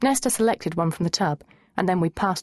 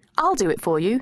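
ordinary delivery

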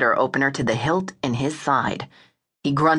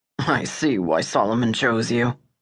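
scornful, mocking tone with a snort; 4 semitones lower than usual. An armed man speaks to a woman who just handed him her gun, with a snort. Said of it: "he said with a snort".

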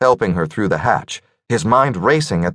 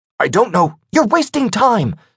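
very high, sharp, snapping voice; 14 semitones higher than usual. Narrator reads a woman's line during an elevator escape, snapping. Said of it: "she snapped".

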